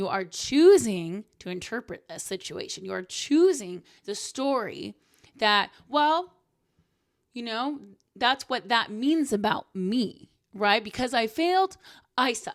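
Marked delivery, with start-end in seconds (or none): 0.2-1.2 'choosing' stressed heavily and louder. A speaker addressing listeners, with heavy emphasis on 'choosing'. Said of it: "heavy emphasis on the word choosing".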